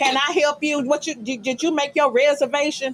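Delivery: speaking while chewing and clacking gum. Acting out the side piece working the front door: imitating a gum-clacking hostess. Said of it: "she's standing up there clacking bubble gum".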